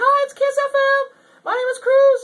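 squeaked out high, loud and slow. Recalling his first radio job at thirteen, in a Mickey Mouse voice. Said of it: "I had a Mickey Mouse voice".

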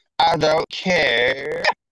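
slow, drawn-out yappy small-dog bark. Mocking how Nicolina ends her sentences, Nicolina's slow barking voice. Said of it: "like a little chihuahua in slow motion trying to bark".

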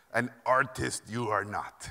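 put-on heavy, thick Hungarian accent with inverted phrasing. Recalling his portfolio being reviewed, the speaker quotes the reviewer in a thick Hungarian accent. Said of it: "thick accent. He talked like Yoda".

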